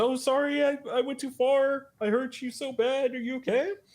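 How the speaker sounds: high, put-on, flustered apologetic voice. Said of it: "And she says".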